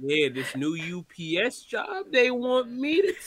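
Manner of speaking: dragged, slowed-down, slow-motion drawn-out speech. Retelling what a man said about his new job, in a slow-motion voice. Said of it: "he just do a slow motion".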